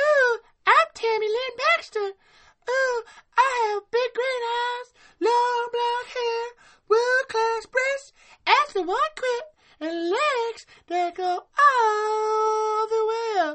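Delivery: very high, loud, stretched-out helium squeak. Joking about a movie, speaking as Tammy Lynn Baxter in a helium voice. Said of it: "talk like you inhaled helium".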